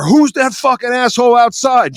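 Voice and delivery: high, furious male yell. Retelling how Ed ran up to a timid bartender, imitating Ed yelling. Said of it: "starts yelling at her".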